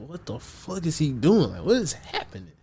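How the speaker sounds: put-on soft, low-key panic, a little bewildered. Retelling own reaction as a friend freaks out: imitating own panic. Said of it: "panicking a little bit 'cause I'm like".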